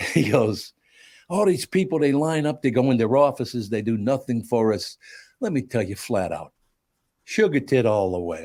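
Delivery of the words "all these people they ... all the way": put-on New York accent. Describing a movie scene to co-hosts, quoting the character, in a Peter Boyle New York accent. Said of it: "He's got this real New York accent".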